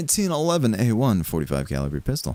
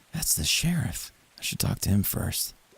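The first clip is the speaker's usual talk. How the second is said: hushed whisper under the breath; 6 semitones lower, 6 dB quieter than usual. Commentating your own game playthrough: whispering. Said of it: "I don't know why I'm whispering".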